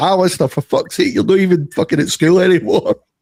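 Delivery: exasperated scolding tone. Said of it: "He's like".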